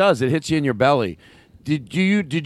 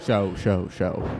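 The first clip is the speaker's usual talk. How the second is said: whispered repeats fading like an echo; 8 semitones lower, 6 dB quieter than usual. Echoing another speaker's words to imitate a reverb echo. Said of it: "may I have reverb in my voice".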